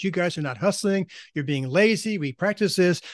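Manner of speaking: put-on shouting coach voice. Describing a coach calling timeout with a boys' team, retelling a coach yelling. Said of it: "he starts yelling".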